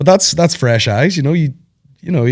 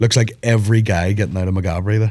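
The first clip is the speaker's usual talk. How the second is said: normal talking voice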